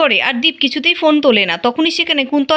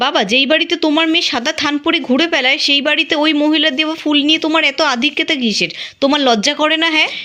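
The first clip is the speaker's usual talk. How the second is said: ordinary delivery, nothing marked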